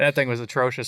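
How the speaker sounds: ordinary talk, nothing marked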